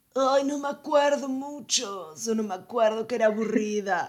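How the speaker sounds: dim-witted, goofy, dopey dumb-guy voice. Quoting Brian answering questions about the movie: imitating Brian's idiot voice. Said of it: "esa voz de pelotudo".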